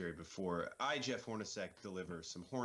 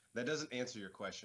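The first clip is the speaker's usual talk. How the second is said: plain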